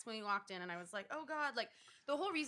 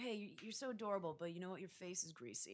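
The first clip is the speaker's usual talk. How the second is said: flirtatious male tone; 7 dB quieter than usual. Retelling what a guy at a bar said to her: imitating a guy hitting on her. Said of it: "I like that, like, impression".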